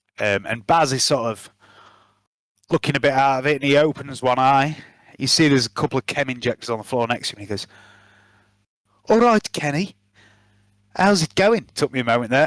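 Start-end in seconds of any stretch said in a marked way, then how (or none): 9.1-11.7 put-on pitched-up Brummie Birmingham accent. Voicing a character from Birmingham greeting Kenny: Birmingham accent. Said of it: "That's one accent I will never do".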